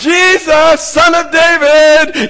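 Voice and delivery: very high, shrill, very loud crying out. Retelling a man in a crowd calling out to Jesus, retelling a yell. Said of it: "yelling out".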